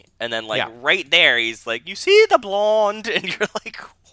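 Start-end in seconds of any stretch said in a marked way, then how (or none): 1.9-3.1 put-on odd English accent, very high and loud. Quoting a movie villain's line, in a weird english accent. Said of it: "why did he use a weird English accent".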